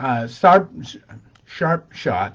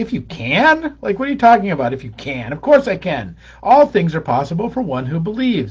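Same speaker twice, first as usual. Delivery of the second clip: biting sarcastic voice with swooping mock disbelief; 3 semitones higher than usual. Retelling Jesus answering the father: retelling Jesus sarcastically. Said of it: "this is Jesus being sarcastic".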